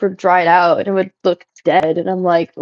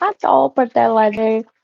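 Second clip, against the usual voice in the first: put-on babyish baby voice; 3 semitones higher than usual. Quoting a half-remembered character's line, in a baby voice. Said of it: "like it's got a baby voice to it".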